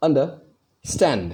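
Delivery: stressed syllable stand in the word understand. Explaining stress in the word understand: stress on stand in understand. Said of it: "मैं stand पे force दे रहा हूं".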